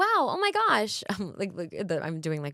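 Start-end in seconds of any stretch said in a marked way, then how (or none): 0.0-1.0 big, very high popped-up commercial read. Describing commercial auditions, demonstrating a bigger read: popped-up commercial read. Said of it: "the more popped up".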